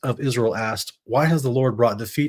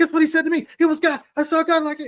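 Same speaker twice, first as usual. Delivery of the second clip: very high, bubbling-over excited gushing. Acting out blurting out news over breakfast: imitating excited gushing. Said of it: "He's not just gushing out the information".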